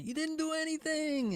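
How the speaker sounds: very high, shrill, accusing yell. Retelling what the caught guy's girlfriend yelled: imitating someone yelling. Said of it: "his girlfriend was all yelling".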